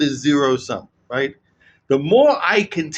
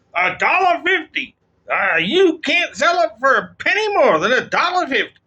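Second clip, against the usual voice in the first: put-on slight, light Texan accent, pitched up; 10 semitones higher than usual. Imitating Trump demanding a low price: Trump with a slight Texan accent. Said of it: "I'm giving him a bit of a Texan accent".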